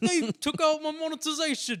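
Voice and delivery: very loud, high-pitched, slow wail. Imitating a YouTuber complaining about demonetization: Grade A Under A impression. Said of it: "That's not a good impression".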